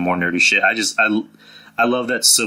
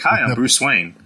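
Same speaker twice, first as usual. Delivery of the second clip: mocking put-on plain voice, pitched higher; 5 semitones higher than usual. Mocking an actor who played Batman in his normal voice: imitating George Clooney as Batman. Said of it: "It's like".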